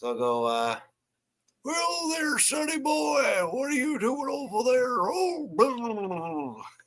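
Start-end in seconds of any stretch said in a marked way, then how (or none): 1.6-6.6 put-on very high, swooping cartoon old-man voice. Showing how they can change their voice, the speaker does a Grandpa Simpson voice. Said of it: "I could change my voice to sound a little bit like it".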